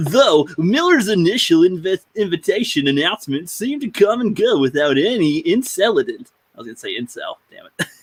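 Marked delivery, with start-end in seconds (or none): 0.0-6.3 put-on broadcast announcer voice. Reading a passage aloud, switching to an announcer voice. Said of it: "Let's do the announcer voice".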